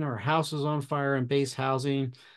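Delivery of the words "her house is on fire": ordinary delivery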